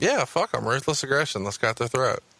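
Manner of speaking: ordinary talk, nothing marked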